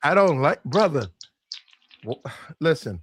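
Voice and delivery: slow, flustered, tripping and fumbling over words. Answering another speaker in a heated back-and-forth: flustered. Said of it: "Why you sound so flustered?".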